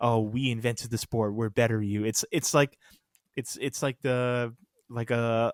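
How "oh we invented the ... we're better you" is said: ordinary delivery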